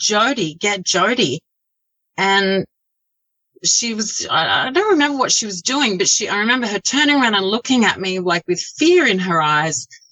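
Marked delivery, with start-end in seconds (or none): 0.0-1.4 scream only lightly voiced, sketched, small. Retelling a warning to an aunt about her dog: retelling a scream. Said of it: "I just screamed".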